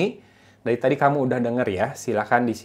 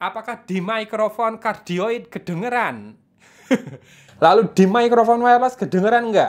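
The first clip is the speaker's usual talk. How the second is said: put-on Javanese medok accent, much higher pitch; 9 semitones higher than usual. Testing two microphones, the speaker asks if they pick it up: louder, put-on Javanese medok accent. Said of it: "saya kencengin suaranya, dimedok-medokin".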